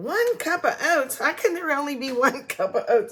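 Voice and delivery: baffled, grumbling complaining. Retelling own earlier baking mistake, imitating own past complaining. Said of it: "I was complaining".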